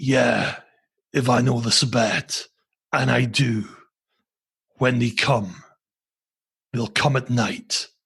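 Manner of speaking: weird put-on faux American accent. Recounting a story, quoting what he said in a weird faux American accent. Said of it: "he did this weird faux American accent".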